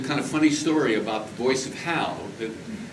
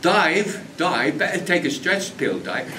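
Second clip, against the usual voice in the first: put-on working-class London Cockney accent, pitched up; 5 semitones higher, 3 dB louder than usual. Recalling the original voice of Hal, in Michael Caine Cockney accent. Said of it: "it sounded like Michael Caine".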